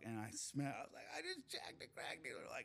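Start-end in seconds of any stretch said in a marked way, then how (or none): 1.2-2.4 put-on drunk voice, laughing, breathy, half whispered. Retelling jumping into the car with friends: imitating laughing drunk. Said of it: "laughing drunk".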